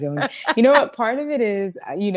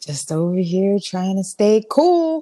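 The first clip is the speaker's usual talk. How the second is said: sultry, sexy voice; 2 semitones higher, 4 dB louder than usual. Answering her co-host's greeting at the top of the episode: deep, sexy voice. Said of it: "you got your deep, sexy voice on".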